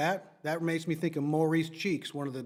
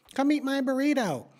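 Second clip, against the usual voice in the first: very high, shrill, loud, grating, annoying put-on voice; 10 semitones higher, 5 dB louder than usual. Mocking a request to do a podcast: annoying put-on voice. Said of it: "if you say it in that voice".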